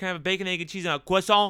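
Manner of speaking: fancy put-on French accent on croissant. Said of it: "I'm French American. That's how we say that".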